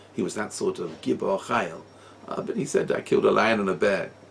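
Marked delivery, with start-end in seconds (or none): none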